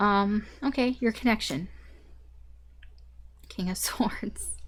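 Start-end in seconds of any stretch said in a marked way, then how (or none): 3.5-4.6 soft, slow, laughing whisper. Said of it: "I'm laughing because".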